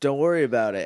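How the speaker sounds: very sarcastic, dripping with sarcasm.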